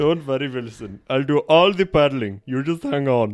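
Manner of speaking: very loud put-on Indian accent. Quoting a line from Castaway as a bit: Indian accent.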